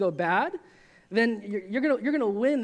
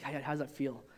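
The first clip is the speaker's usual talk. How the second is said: soft, hushed half-whisper under the breath; 8 semitones lower, 10 dB quieter than usual. Retelling how a guy from high school massaged shoulders: imitating a half-whisper. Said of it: "he would whisper".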